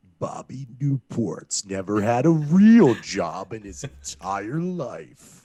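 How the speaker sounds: very slow, deep, loud, drawn-out voice. Quoting a remembered TV line in a put-on deep voice. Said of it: "the deep voice is probably from Parks and Rec".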